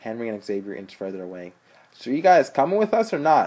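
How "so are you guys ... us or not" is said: very loud, impatient delivery. Henry presses Kyle and the others for an answer, impatient. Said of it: "Henry asked impatiently".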